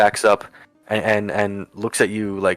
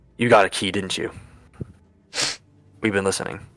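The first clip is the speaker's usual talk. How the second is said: hushed whisper, barely voiced. A prisoner in the neighbouring cell calls to the newcomer, whispering. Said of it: "you hear him whisper".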